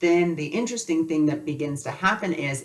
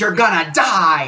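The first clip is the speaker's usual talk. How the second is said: put-on scream, higher and louder; 2 semitones higher, 8 dB louder than usual. Recounting moving towards a light when a voice cut in, retelling a screamed warning. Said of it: "that voice screams".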